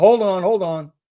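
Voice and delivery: half a yell. Alone at home in the bathroom, hearing a knock, retelling screaming out. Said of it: "I kind of screamed out".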